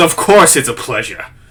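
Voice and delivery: touch of cockiness, self-assured. A game master voices a character replying to a greeting, a bit cocky. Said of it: "a bit of cockiness in his voice".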